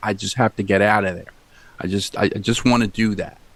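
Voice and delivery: ordinary talk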